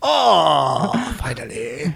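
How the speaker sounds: rough, creaky creature voice, stretched-out oh. Imitating a listener friend again, sounding like Watto and Sebulba voice. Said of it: "It was like Watto and Sebulba".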